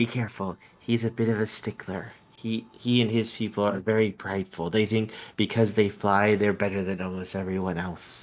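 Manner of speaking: soft, hushed, confiding stage whisper. Voicing a little dragon warning Portia about the Emperor: little dragon half-whispering. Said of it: "you hear the little dragon whisper to you".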